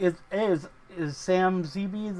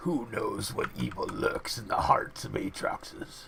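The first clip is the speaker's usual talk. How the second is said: crazy, overpowered put-on voice in breathy whisper; 9 semitones lower, 4 dB quieter than usual. Speaking to the Geos guy from the shadows: insane O P voice. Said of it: "who's making that insane O P voice?".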